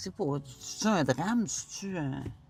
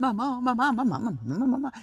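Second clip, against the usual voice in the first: put-on child voice calling out nonstop, constant yelling; 9 semitones higher, 3 dB louder than usual. Imitating the kid who kept yelling for his mother: imitating the kid screaming. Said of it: "il criait tout le temps".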